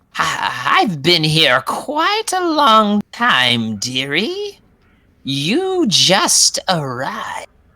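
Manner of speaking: high, swooping, cackle-laced laughing voice. Voicing a woman character who answers the group, cackling and laughing. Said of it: "she kind of cackles and laughs".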